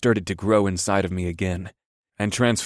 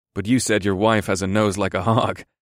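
ordinary delivery

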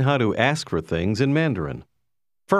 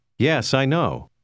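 ordinary delivery

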